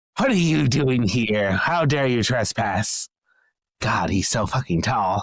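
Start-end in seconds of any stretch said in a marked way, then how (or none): 0.2-3.1 monster voice of a kobold creature. Narrating a game scene, the speaker voices kobolds confronting Pylus in Sam's voice. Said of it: "They all sound like Sam".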